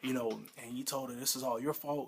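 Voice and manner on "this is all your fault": ordinary delivery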